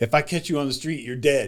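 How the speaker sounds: ordinary talk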